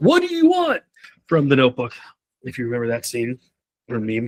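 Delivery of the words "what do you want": acted, very high, tearful crying wail. Speaker advising on giving feedback, quoting a movie scene, imitating Ryan Reynolds crying outburst. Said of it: "the fucking Ryan Reynolds guy who's like".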